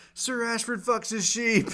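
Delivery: very high, loud shout. Retelling a show scene where a dude yells out before the jousting: imitating someone yelling. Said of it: "the dude yells out".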